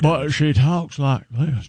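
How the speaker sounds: put-on Southern accent. Discussing a movie with a group, the speaker does a Jodie Foster impression. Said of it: "I don't know why I'm using a Southern accent".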